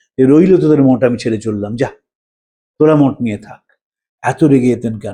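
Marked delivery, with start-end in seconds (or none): none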